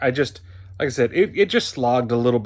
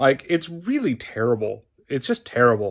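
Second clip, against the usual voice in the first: normal talking voice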